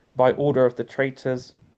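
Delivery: ordinary talk, nothing marked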